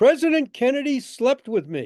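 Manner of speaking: very thick Irish brogue, laid on, high and loud. Retelling a caller's opening line to the bookshop, very thick irish brogue. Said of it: "very thick Irish brogue".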